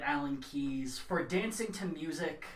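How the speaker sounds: usual speaking voice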